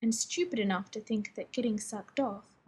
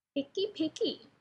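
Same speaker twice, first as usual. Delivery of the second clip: high talking-parrot voice; 6 semitones higher than usual. Narrator reads a man speaking for his stuffed parrot: bird's voice. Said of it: "Pete says in a bird's voice".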